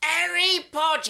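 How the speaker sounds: loud, high-pitched shout at full force. Shouting a movie name after another speaker asks for it loud: saying it really loud. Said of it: "If you say Harry Potter real loud".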